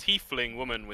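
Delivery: plain reading voice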